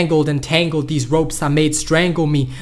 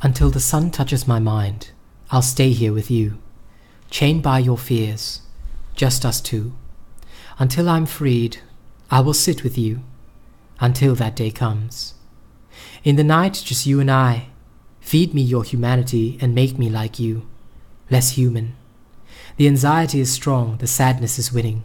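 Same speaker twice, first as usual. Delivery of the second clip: soft, gentle, quiet voice; 4 semitones lower than usual. Reading the piece Shard of Shadow on stream, in a softer voice. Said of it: "I'm gonna use a softer voice for this one".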